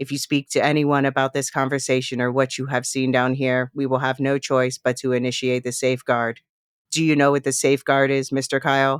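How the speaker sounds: flat, mechanical robotic monotone delivery. Retelling a show scene where a figure addresses a man, flat robotic voice. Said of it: "flat and robotic".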